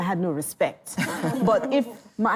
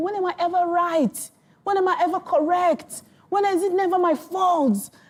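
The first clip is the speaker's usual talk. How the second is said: mock tearful crying, higher; 10 semitones higher than usual. Retelling complaining to a parent as a child: imitating own past crying. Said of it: "crying to my mom".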